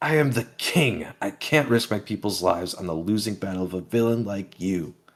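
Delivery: mild, half-shouted yell. Retelling a manga scene, quoting a second character: imitating a scream back. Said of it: "Harold screams back at him".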